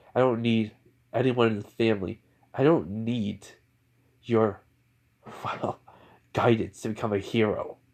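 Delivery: ordinary delivery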